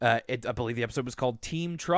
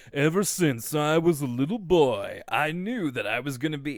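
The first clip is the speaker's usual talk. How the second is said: thickly smarmy, slightly aged-up voice. The speaker imitates Brain, calling the voice hard to imitate; put-on smarmy Brain voice. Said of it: "it really sounds so smarmy".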